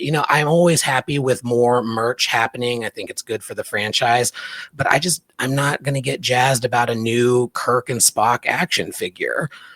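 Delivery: plain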